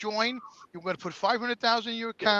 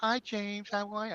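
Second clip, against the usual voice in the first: imitated put-on woman's voice, much quieter; 6 dB quieter than usual. Retelling a phone call where a woman answered and greeted him, imitating a woman's voice. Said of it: "When [name] does a woman's voice".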